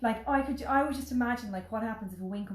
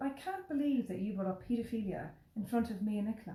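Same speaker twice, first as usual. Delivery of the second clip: mock dry, sarcastic tone of disbelief; 4 dB quieter than usual. Retelling own remark to a wedding guest: retelling own sarcastic remark. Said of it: "I was totally sarcastic".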